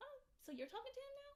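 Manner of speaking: play-acted very high, soft, calm, polite voice. Retelling how the roommate was asked: imitating own polite calm tone. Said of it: "asked her very politely and calmly".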